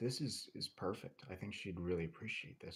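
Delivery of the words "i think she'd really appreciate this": whispered, quieter. A player's character indicating a gold piece, saying the last bit in a whisper. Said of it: "And I'll say that last bit in a whisper".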